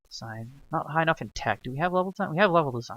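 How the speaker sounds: half-whispered muttering, as if to oneself. Talking to oneself while recording a video, half-whispering. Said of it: "I'm whispering".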